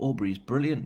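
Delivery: ordinary delivery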